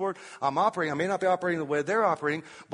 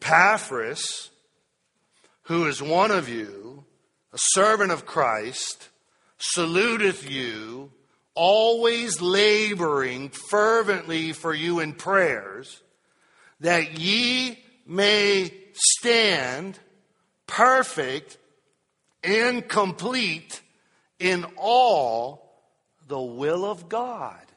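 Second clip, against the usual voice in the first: very slow, deliberate, raised reading voice; 5 dB louder than usual. Reading a scripture verse aloud for listeners following along, very slow reading. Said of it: "so I'll read it very slow".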